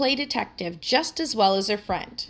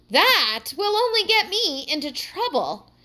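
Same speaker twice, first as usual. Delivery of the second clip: exclaimed, pitched up, slow and drawn out; 8 semitones higher, 4 dB louder than usual. Heidi answers the advice she has just been given, exclaiming. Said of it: "exclaimed Heidi".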